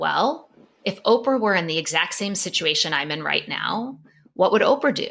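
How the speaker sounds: plain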